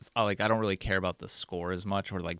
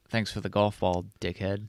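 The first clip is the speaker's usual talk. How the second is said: plain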